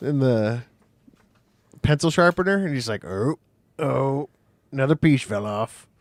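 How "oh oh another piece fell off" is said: put-on old cartoon man voice. Imitating the old man from The Simpsons caught in a pencil sharpener: Jasper voice. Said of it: "like the guy from The Simpsons that gets his beard stuck".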